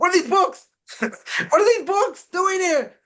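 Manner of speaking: very high, shrieking, terrified scream. Retelling a man crying out in his dream of judgment, retelling a scream. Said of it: "So the Netziv screams out in his dream".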